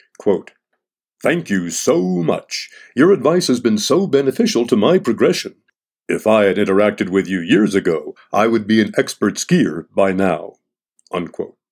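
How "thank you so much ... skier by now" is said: plain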